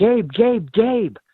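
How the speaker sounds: put-on high scream. Retelling dad coming into the room at night, imitating dad screaming. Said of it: "he's screaming at me".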